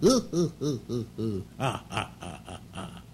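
laughing announcer-style put-on voice.

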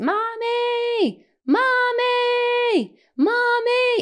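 mock, very high, drawn-out wailing scream. Retelling hearing Eli call for her, imitating Eli screaming. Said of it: "he's just screaming my name".

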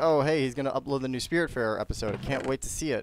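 ordinary delivery

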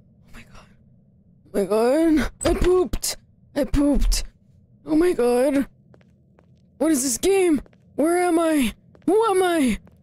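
nervous and on edge. Playing a jump-scare game for channel viewers, sounding nervous. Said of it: "Guys, I'm nervous".

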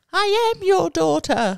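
very high, loud, put-on English accent. Explaining how they always talk, the speaker quotes them in a put-on English accent. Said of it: "They always talk in an English accent".

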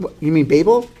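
normal talking voice

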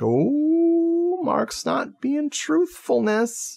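high, slow, mock shocked tone. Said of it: "We're like".

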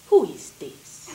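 put-on heavy, thickly laid-on Hungarian accent. Retelling a grandmother answering a call from the police, in a thick hungarian accent. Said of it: "little Hungarian woman with a very thick accent".

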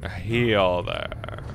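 sassy, drawn-out singsong.

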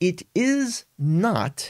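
it is not stretched out very slow, emphatic not. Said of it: "and I would raise my voice, the tone in my voice".

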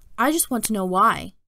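plain

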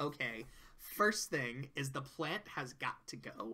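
put-on soft, light, sing-song near-Valley Girl. Retelling how Trixie gets the new job and goes to the office; Trixie's near-Valley Girl voice. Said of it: "I don't know why I made her sound like a Valley Girl".

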